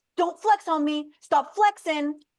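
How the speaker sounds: pushy, aggressive, high-pitched cop voice. Describing an incident with Matthew, the speaker quotes the cop: imitating an aggressive cop. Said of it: "this cop was being very aggressive".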